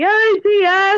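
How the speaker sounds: very high, loud yelled call-out. Retelling yelling a greeting when walking past a classroom each morning, retelling a yell. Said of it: "just yelling".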